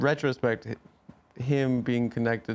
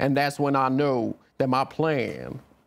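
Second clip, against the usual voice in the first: slow character voice, every word drawn out; 2 semitones higher than usual. Asked to perform, doing a Kevin Spacey impression as Frank Underwood. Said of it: "Let me hear your Kevin Spacey in House of Cards".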